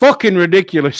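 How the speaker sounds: play-acted loud, angry shout. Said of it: "he shouts".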